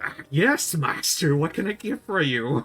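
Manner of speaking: oily, fawning, slimy servile voice. Showing the phrase used to find a character voice, in a slimy voice.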